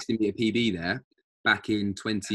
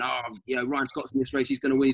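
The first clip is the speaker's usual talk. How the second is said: mock shouting, imitated; 3 semitones higher than usual. Retelling a mum at his race shouting about another runner: retelling a mum shouting. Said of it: "she was like shouting".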